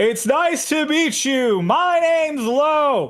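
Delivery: overloud and very high-pitched. Narrator voices a guy standing up to greet the sister's friends: voice too loud. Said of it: "in a voice that is too loud".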